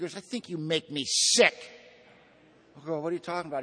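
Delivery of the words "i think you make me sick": loud, raised Irish brogue. Retelling a priest's reply to him in conversation, deep irish brogue. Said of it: "He had this deep Irish brogue".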